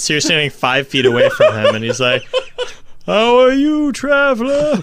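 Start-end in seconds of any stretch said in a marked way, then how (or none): 3.0-4.8 far-off, distant, very high-pitched voice. Standing five feet from a traveler, a character greets him in a distant-sounding voice. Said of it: "What's making your voice do that".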